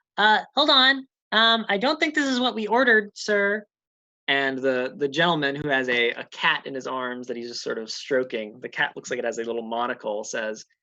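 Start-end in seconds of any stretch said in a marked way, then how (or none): 0.2-3.7 shrill, high, raised creature voice. Voicing a kobold who stops a delivery: kobold voice. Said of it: "the kobold sort of stops him and says".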